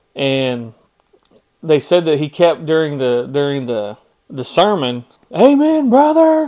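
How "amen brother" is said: mock sarcastic heckling, much higher and louder. Retelling a smelly man heckling during a sermon, imitating sarcastic heckling. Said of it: "being real sarcastic".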